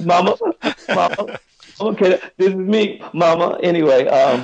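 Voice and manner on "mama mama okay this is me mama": put-on hiccuping sobbing, higher pitch. Retelling calling mom from the car after harsh criticism: imitating own hiccuping sobs. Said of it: "I'm crying to the point where I'm hiccuping".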